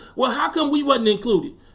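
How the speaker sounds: normal talking voice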